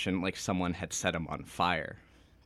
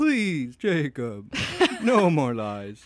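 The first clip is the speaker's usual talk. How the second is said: loud, swooping talking-horse voice; 8 semitones higher, 7 dB louder than usual. Reading a story scene aloud, the speaker voices Carlisle in a Mr. Ed voice. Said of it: "sounding like Mr. Ed".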